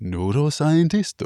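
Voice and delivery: exaggerated Japanese accent. Asked how a Japanese person would say the word, in an offensive Japanese accent. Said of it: "In my most offensive Japanese accent".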